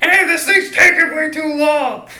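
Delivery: very loud, shrill, high-pitched scream. Acting out standing up in a movie theater: imitating screaming at the screen.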